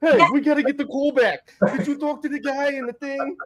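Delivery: mock shrill, freaked-out, frantic yelling, very high. Comparing a scene from The Bear to one's own family, acting out family yelling. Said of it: "Yelling and cursing".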